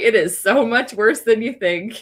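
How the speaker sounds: very slow, casual, unbothered, offhand delivery. Retelling what a friend said while a table burned: imitating a nonchalant remark. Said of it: "He said it so nonchalant".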